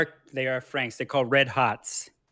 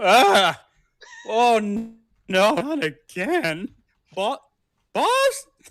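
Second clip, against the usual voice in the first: startled frog voice, very high and slow; 9 semitones higher, 5 dB louder than usual. Voicing a character woken suddenly by a thunderclap: startled Froggy voice. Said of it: "Froggy wakes up from this thunderclap".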